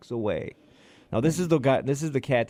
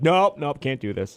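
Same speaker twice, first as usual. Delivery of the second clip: loud, drawn-out, stubborn delivery; 2 semitones higher, 5 dB louder than usual. Retelling a dog refusing on a walk, voicing her dog's refusal. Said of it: "then she's like".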